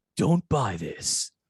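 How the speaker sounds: pumped-up hype-man announcer voice. Hyping the worst DVDs of all time in a hype-man announcer voice. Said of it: "If I could do like the hype guy voice, like hyping that".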